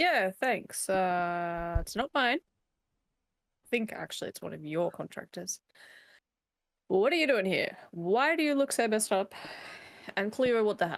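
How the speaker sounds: unbothered, nonchalant, casual delivery. Answering another character in the scene as their character: nonchalant in-character reply. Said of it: "that's a very kind of nonchalant, like, attitude".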